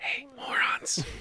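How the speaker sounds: quiet, hushed whisper. A player calls down the stairs to the others, said quietly. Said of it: "You do this quietly".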